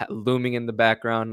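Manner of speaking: usual speaking voice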